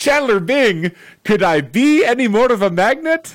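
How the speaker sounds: put-on Eastern European accent. Retelling a fridge magnet seller's joke: imitating an Eastern European accent. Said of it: "in his, like, E-, Eastern European accent".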